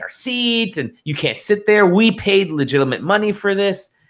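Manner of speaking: mild ranting yell with rising pitch. Retelling a dispute over seats, retelling a man screaming. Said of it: "this dude is screaming at me".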